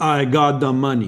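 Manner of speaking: put-on heavy, thick French Canadian accent. Retelling what a caller said on the phone, in a thick French Canadian accent. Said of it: "a very thick French Canadian accent that says".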